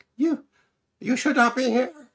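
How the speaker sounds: very high, very loud, shrill put-on voice. Reading out the quoted line in a high-pitched voice. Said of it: "That's my high pitched voice".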